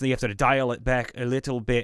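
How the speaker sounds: Scottish accent. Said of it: "so Scottish is sort of like this".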